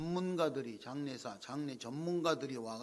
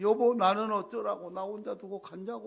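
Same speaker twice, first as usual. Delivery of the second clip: put-on tearful wailing, higher and louder; 7 semitones higher, 8 dB louder than usual. Retelling a widow's words at her husband's funeral: imitating tearful wailing. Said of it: "막 울면서 막".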